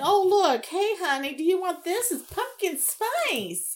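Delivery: high, sarcastic, teasing delivery. Recounting a walk through a Target store, retelling a sarcastic offer. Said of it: "I'm just being sarcastic and saying".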